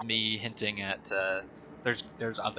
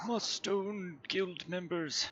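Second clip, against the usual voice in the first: put-on slow, high, drawn-out old-man voice; 9 semitones higher, 6 dB quieter than usual. Showing how old Marin sounded in the game: old Marin's voice. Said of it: "old Marin was like".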